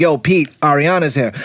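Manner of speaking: ordinary delivery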